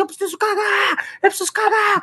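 high, urgent, desperate yell.

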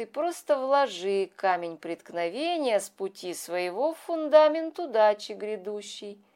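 plain reading voice

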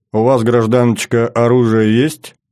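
ordinary delivery

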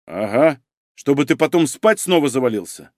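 ordinary delivery

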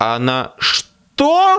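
surprised, startled, very high pitch. On a bad phone line, the narrator reacts to what Carmichael tells him; surprised. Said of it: "удивился я".

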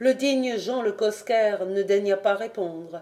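plain

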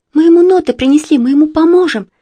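heated, eager, high voice. A girl chimes in after her friend, promising help for the boy: eagerly chiming in. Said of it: "горячо подхватила Марина".

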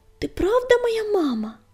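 sudden, high-pitched, blurted-out words. Reading the little one's sudden question to his mother, blurted out. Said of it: "выпалил".

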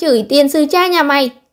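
yelling loudly. A character rushes forward ahead of the others, shouting loudly. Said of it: "xông lên trước kêu to".

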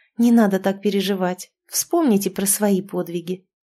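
plain reading voice

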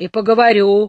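grouchy, grumpy, cantankerous. Narrator voices an old man answering the captain in their argument: grumpy. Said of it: "сварливо ответил старик".

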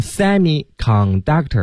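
semiconductor with wrong stress on first syllable.

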